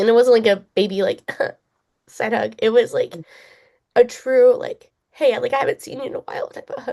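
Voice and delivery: speaking while in tears, crying through words. Recounting being hugged by Kyle, crying while talking. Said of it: "I don't know why I'm crying so much".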